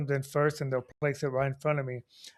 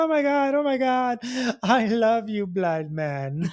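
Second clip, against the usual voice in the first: put-on high, drawn-out, giggly young woman gushing; 8 semitones higher, 4 dB louder than usual. Retelling what a young woman said on meeting them: imitating a giggling young woman. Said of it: "giggly young lady ... giggling and laughing".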